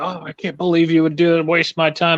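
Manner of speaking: acted angry, indignant, griping tone. Retelling what angry customers would say: imitating an angry customer. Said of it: "when customers got mad at me".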